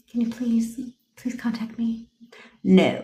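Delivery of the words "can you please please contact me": meek, timid, soft pleading. Coaching listeners on commanding attitude, the speaker shows how not to ask: timid pleading. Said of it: "They don't talk like this".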